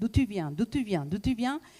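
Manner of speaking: plain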